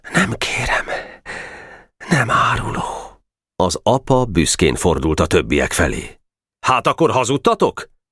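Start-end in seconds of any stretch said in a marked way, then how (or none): 0.1-2.8 brave, quiet, soft voice. A small boy answers a father in front of the gang: quiet reply. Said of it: "csöndesen".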